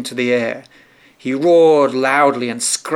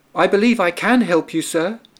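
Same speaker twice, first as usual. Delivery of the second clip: cheerful, happy, pitched-up little mouse voice; 6 semitones higher than usual. The little mouse speaks up to the lion, saying it happily. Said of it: "the little mouse said happily".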